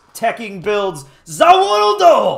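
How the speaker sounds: loud, big, swooping, dramatic, belted-out declaiming. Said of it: "in the Dio voice".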